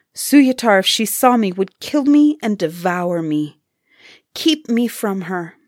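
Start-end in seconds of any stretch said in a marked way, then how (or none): none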